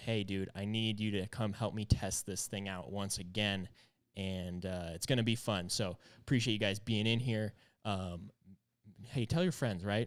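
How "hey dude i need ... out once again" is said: usual speaking voice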